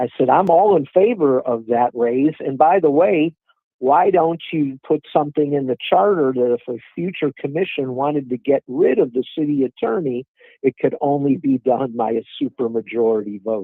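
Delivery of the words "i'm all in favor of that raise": ordinary talk, nothing marked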